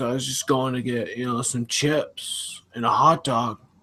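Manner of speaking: put-on stoner impression. Retelling a story he heard about a stoner type person, imitating a stoner. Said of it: "he said it was a stoner type person".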